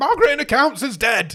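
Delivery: high, piercing, full-volume shrill scream. Acting out screaming news to a coworker at work: pretend scream. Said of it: "if I came up and screamed".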